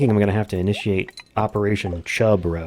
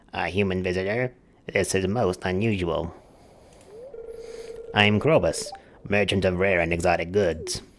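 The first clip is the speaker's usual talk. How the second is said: throaty, swallowed-back voice from far back in throat; 3 dB quieter than usual. Voicing a shadow merchant greeting a human visitor, in a Krobus back-of-throat voice. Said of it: "low like way back in the throat".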